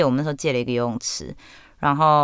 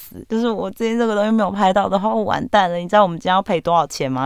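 put-on crying, desperate pleading, high and tearful; 6 semitones higher, 3 dB louder than usual. Retelling walking up to a man and pleading, retelling tearful pleading. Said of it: "那时候真的是悲从中来".

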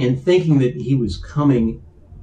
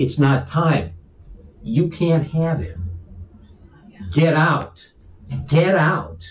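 frightened yelling, slow and drawn out, word by word; 3 semitones higher than usual. Retelling a dream, yelling at an entity to leave: retelling a yell. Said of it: "And I started yelling at her".

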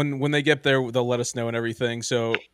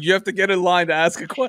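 mock high-pitched, complaining yell; 7 semitones higher, 4 dB louder than usual. Retelling a lady in a voucher line snapping at a man, imitating a lady yelling. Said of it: "she's yelling at this guy".

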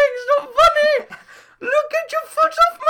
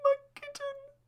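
woman crying, slow, quiet sobbing. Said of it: "that crying woman".

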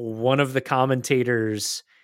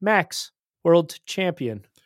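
mechanical, rote, robot-like delivery, a bit high; 6 semitones higher than usual. Retelling how a presenter announced the title: Johnny Herbert like a robot. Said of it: "like a robot reading a, a teleprompter".

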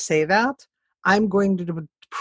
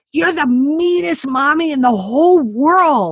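put-on acted, loud, high, furious five-year-old tantrum voice; 8 semitones higher, 6 dB louder than usual. Mother retelling what her five-year-old son said to her, imitating an angry child. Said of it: "he was so angry at me and he stomped".

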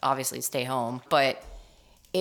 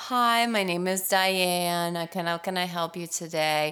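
very slow, drawn-out, saucy receptionist voice. Imitating a customer service worker answering a call: imitating a saucy receptionist. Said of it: "she'll start off saucy like that".

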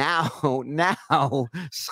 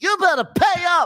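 shrieking, very high, loud, furious scream; 7 dB louder than usual. Retelling how Scott screamed through the halls: imitating Scott screaming. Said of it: "it was one word he was screaming".

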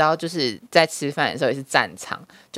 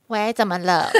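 put-on girl's voice, pitched higher; 4 semitones higher than usual. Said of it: "我有这个声音啊".

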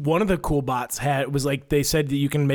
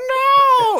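put-on very high, shrill, drawn-out little girl's wail; 8 dB louder than usual. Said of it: "you hear her go".

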